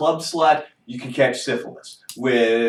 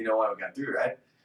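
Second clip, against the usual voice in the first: soft, playful, joking, teasing tone; 3 semitones lower, 8 dB quieter than usual. Retelling a joke made to her while walking out of Walmart: retelling a joking remark. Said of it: "I jokingly look at her and I'm like".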